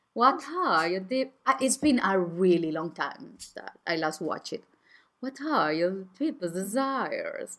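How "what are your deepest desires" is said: the devil's voice. Speaking as Lucifer Morningstar with a British accent, greeting listeners. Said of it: "I like your voice".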